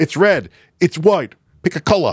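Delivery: lines in a put-on Australian accent. Quoting a favorite line from Ragnarok: imitating an Australian accent. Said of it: "unless you are Australian".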